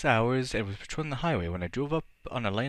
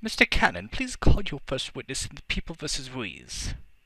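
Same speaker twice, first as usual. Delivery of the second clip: put-on raised, loud voice with British accent; 3 semitones higher, 5 dB louder than usual. Reading a courtroom scene aloud, the judge addresses the prosecutor: Judge Simpson, British accent. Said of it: "She's British for some reason".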